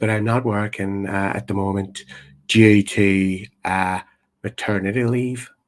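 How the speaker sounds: very gentle, delicate, low, unhurried voice. Retelling a compere asking a woman her job, quoting her very soft, gentle voice. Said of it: "she had one of those very gentle voices now, very very soft".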